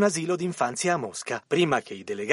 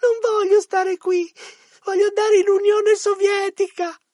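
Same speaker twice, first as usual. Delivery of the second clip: very high, loud, desperate sobbing wail; 14 semitones higher, 6 dB louder than usual. Telling a joke, the smallest child answers the others, imitating desperate sobbing. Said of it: "singhiozzando disperato".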